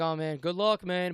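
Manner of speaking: slow, drawn-out, sarcastic drawl. Retelling what the cop said about getting married: imitating a sarcastic remark. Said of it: "But he said it, like, sarcastically".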